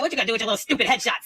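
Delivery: put-on mocking, teasing tone. Retelling how classmates made fun of a schoolmate: retelling a mocking taunt. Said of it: "we would make fun of him".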